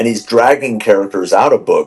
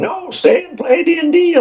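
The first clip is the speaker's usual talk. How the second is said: shrill, very high screaming yell. Describing a show scene where Will yells at another character: imitating Will screaming. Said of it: "screaming and yelling at him".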